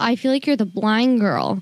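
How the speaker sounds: usual speaking voice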